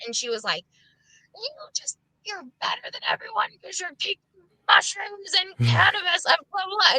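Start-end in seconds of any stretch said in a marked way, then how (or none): 1.3-7.0 put-on flipped-out, high, angry, accusatory ranting voice. Retelling a relative's angry outburst at the speaker: imitating an angry rant. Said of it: "she got mad at me, and she flipped out".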